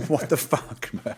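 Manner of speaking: put-on high, slow, drawn-out, fed-up exasperated outcry. Retelling hours spent at the screen, imitating own screaming. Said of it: "hours screaming at the screen going".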